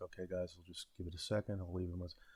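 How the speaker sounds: put-on quiet under-breath talk. Retelling talking to viewers while trying not to be noticed: imitating own quiet under-breath talking. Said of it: "talking like this".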